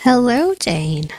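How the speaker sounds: fake, seductive, put-on sexy voice. Greeting someone by name as a bit, in a put-on sexy voice. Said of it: "was my sexy voice".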